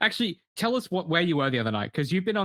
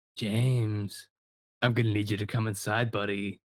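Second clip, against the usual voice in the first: put-on eerie, ghostly old man voice, pitched lower; 5 semitones lower than usual. Retelling a voice heard at an empty drive-through, ghost old man voice. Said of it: "sounded like a ghost old man voice".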